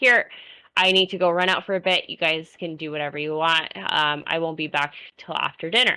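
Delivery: ordinary delivery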